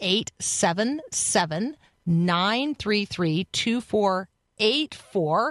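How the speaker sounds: deliberate, slow, careful digit-by-digit delivery. Repeating a text number for first-time listeners: saying a number more slowly. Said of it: "I'm gonna say that number more slowly".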